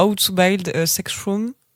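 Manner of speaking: English accent, said slowly and carefully. Saying a show's English title: English accent. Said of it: "avec mon magnifique accent anglais".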